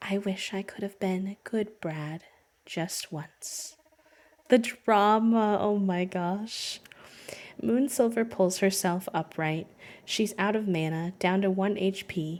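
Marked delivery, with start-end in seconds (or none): 0.0-3.8 whispering. Narrating a bard lying prone on the floor, whispering. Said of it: "He whispers".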